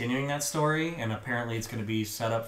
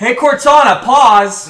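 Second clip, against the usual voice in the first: yelling, pitched higher and louder than normal; 13 semitones higher, 22 dB louder than usual. Retelling commands to the TV when the pizza guy shows up: imitating yelling at the TV. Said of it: "yell at my T V".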